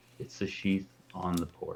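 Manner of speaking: quick whisper. A role-play character quickly tells Tidley something unheard by Trey: quick whisper. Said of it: "just whisper".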